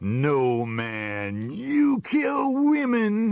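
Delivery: very slow, very high, deliberate, drawn-out. Reading a story, voicing a man's reply during a fight, said very slowly. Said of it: "he said it so slowly".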